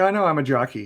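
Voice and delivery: normal talking voice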